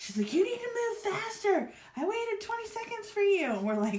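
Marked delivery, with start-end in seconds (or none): 0.3-3.5 shrill, very high-pitched, acted yelling rant. Retelling how a woman at a drive-thru yelled at a friend: imitating someone yelling. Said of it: "starts yelling at my friend".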